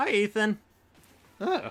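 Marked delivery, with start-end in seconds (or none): 0.0-0.6 voice breaking, cracking and pitched up. Greeting someone's son over the stream: voice cracking. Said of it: "my voice just cracked".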